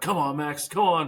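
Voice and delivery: play-acted, high, eager, hard cheering. Retelling cheering on a shooter, like at a basketball game: retelling own cheering. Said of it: "cheering you on".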